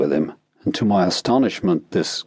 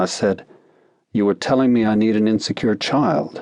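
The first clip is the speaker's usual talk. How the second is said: ordinary delivery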